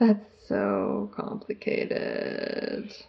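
creaky vocal fry. Reacting to hearing about teams competing on the same research, use heavy vocal fry. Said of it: "use as much vocal fry as I could".

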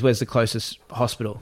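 ordinary delivery

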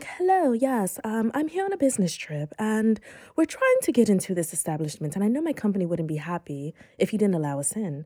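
put-on British accent, sing-song. Retelling a friend calling a club: imitating a put-on British accent. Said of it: "she put on, like, a British accent".

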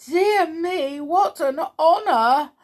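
very high, shaky, quavering voice. Mrs. Pepperpot greets a big brown bear, shaky voice. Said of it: "said Mrs. Pepperpot in a shaky voice".

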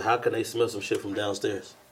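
ordinary talk, nothing marked

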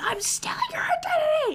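very high-pitched, right-in-your-face screaming. Picturing an imagined man confronting a stranger, mock screaming. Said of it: "just screaming in their face".

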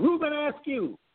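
play-acted blurted scream, very high. Telling a childhood story, calling out an answer to a question, retelling a scream. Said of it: "I screamed out".

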